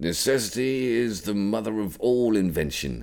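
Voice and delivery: grumpy tone. A character facing a locked padlock speaks, in his best grumpy tone. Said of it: "in his best grumpy tone".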